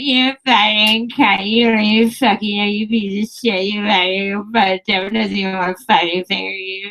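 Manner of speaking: put-on slurred talk of very drunk girls. Retelling what very drunk girls at a show said: imitating very drunk girls talking. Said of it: "just like that".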